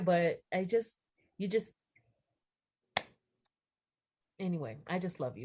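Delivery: speaking while crying, tearful. Speaking to someone who survived an accident, tearful. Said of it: "don't cry".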